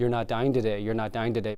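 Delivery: ordinary talk, nothing marked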